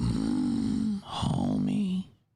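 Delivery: creaky, very low cartoon voice. Showing a better impression than Homer: Marge voice. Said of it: "I do a better Marge than a Homer".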